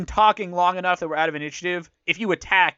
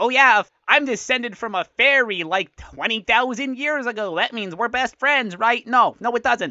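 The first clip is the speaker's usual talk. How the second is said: very nasal fairy voice, pitched higher; 4 semitones higher than usual. Playing a character of fairy descent in a role-play scene, really nasal fairy voice. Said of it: "I'm trying to make it like really nasal".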